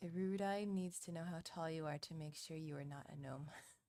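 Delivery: ordinary delivery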